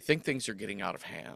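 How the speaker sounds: dry, deadpan, breathy, acted-out near-whisper. Retelling a movie character's line about the chaos: imitating a deadpan delivery. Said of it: "in the most deadpan way".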